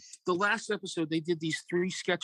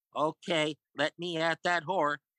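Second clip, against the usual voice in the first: put-on slow, sickly kid voice. Retelling a comedy sketch's final line: sickly kid voice. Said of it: "that sickly kid voice go".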